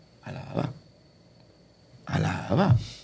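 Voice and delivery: very soft, breathy, hushed, barely-there whisper. Recounting a past struggle, the speaker acts out their own praise in a soft whisper. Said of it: "era un susurro".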